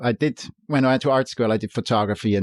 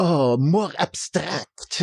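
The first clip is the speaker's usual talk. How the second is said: put-on heavy, self-important Eastern European accent, pitched up; 7 semitones higher than usual. Recalling what a stereotypical artist would say in class, imitating a thick Eastern European accent. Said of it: "he would have a thick accent and sound important".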